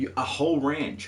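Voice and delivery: very bad fake American accent, pitched high. Chatting while playing a game, the speaker blurts a line in bad american accent. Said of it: "I don't know why I said that in American".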